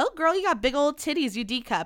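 high, nice, sweet, friendly tone. Showing how the remark would sound if it were kind: imitating a nice, friendly tone. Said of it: "saying it in a nice way".

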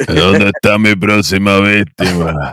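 loud, thick-voiced, menacing hulking brute voice. Picturing a huge champion fighter arriving, in a very deep Darwin voice. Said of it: "con la voz de Darwin más gruesa que el diablo".

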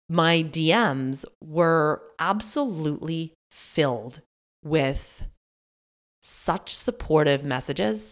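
slow, careful, deliberate talking.

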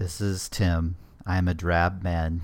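very low, flat, drab, emotionless monotone. Introducing himself with no emotion or feelings: flat NPR voice. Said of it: "No emotion or feelings".

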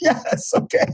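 acted, exhausted, defeated tone with all fight gone. Recounting people worn out after unloading on Dr. Hitt, finally agreeing: imitating an exhausted reply. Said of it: "they were exhausted".

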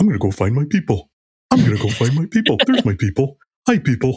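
eager, swooping little cartoon puppy dog voice. Speaker describing how they went about finding their people, little cartoon puppy voice. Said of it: "Love the voice".

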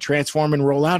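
ordinary talk, nothing marked

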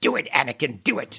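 quiet, deep voice. Breaking off from tips on ceiling fans to repeat a joke, doing the Emperor impersonation. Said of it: "I was doing the Emperor impersonation there".

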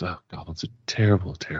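scornful, contemptuous, disdainful sneering tone. Voicing the guard captain as she hears of the goblin case; sneering. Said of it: "She sneers".

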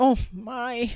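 worried fretting. Reading a bear character starting to fret again over last-minute plans: fretting. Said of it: "she's starting to fret again".

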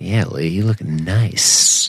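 slow, drawn-out delivery, every word stretched out. Imitating Hilo praising Lee for getting back in shape: imitating Hilo. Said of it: "he says it in that kinda like".

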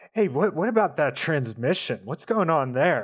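low, friendly tone. Showing how he speaks to a man, in a lowered, familiar but friendly tone. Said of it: "drop my voice to him and say in a sort of familiar but friendly tone".

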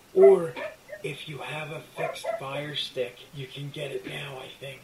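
loud, eerie, creepy spooky put-on voice. A speaker explains where to watch a new horror comedy, in a creepy voice. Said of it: "I love that creepy voice you just did".

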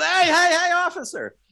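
very high shout. Recalling yelling thanks at people in New York, the speaker acts out calling to an officer; retelling yelling at an officer. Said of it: "I'm yelling at police officers".

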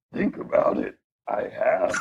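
soft, hushed, breathy, whispery little put-on voice. Answering the speaker's question; Yoda voice. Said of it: "the Yoda voice".

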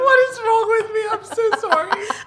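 laughing hard while talking. Apologizing for being unable to stop, laughing hard while talking. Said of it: "I've never seen you laugh this hard".

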